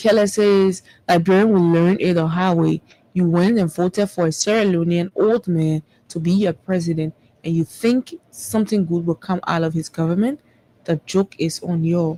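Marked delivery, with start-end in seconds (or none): none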